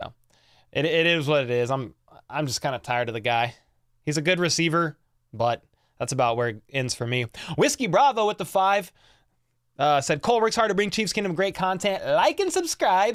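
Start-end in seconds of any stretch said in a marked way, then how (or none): 12.0-13.2 sudden high-pitched put-on Kazakh accent. Closing a plug for the channel, slipping into a Borat voice. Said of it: "I don't know why I said that like Borat".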